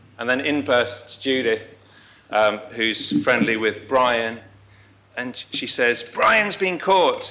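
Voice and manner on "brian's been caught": put-on very high-pitched voice with Welsh accent. Retelling how Judith burst in with news about Brian, imitating Judith's Welsh accent. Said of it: "in her Welsh accent".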